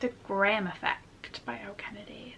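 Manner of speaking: marked, clear American accent. Book reviewer names the next book and its author; American accent. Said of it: "why did I say that was such an American accent".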